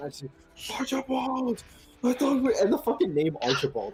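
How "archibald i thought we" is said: put-on very high, shrill, high-pitched scream. Retelling another player's line: imitating a screamed name. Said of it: "he has screamed the name Archibald".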